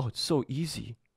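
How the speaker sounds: soft, mock overjoyed, ecstatic little-boy voice. Watching an interview, the speaker mimics Matt's quick change, imitating Matt, ecstatic. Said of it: "ecstatic, like a little boy".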